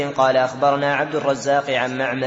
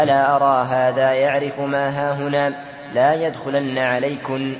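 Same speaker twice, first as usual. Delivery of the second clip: normal talking voice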